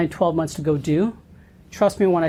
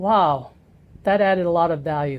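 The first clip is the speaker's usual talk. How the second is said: dry, sarcastic, insincere praising tone. Retelling a paid negotiator's remark during negotiations: mock-sarcastic remark. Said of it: "like sarcastically".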